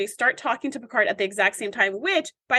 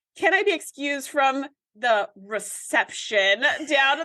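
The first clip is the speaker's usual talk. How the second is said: plain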